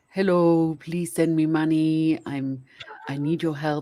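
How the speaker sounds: put-on speech with an Israeli accent. Describing a TikTok parody, doing the swindler's plea in Tinder Swindler Israeli accent. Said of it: "in his voice and his Israeli accent".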